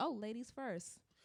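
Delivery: ordinary delivery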